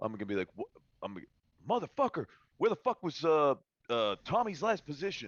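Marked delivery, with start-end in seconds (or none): 1.7-5.3 very high, loud yelling. Playing a character calling out to another character: yelling to someone. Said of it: "yell to, uh, uh, uh, to Floyd".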